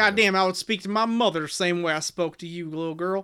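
put-on Appalachian accent. Retelling a Coal Miner's Daughter scene in a Tommy Lee Jones Appalachian accent. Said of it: "it's a pretty good impression of Tommy Lee Jones and Coal Miner's Daughter. ... it's more of a Butcher Holler accent than West Virginia".

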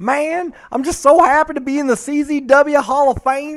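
very high, booming voice with words stretched out long. Answering a request for an impression: Drake Younger impression. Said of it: "That's what he sounds like".

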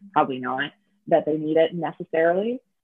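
usual speaking voice

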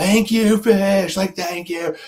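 shrill, very high screaming. Speaker retells leaving a show and thanking the band: retelling screaming thanks. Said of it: "and I was just screaming".

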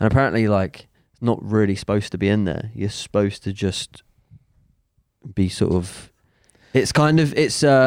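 ordinary talk

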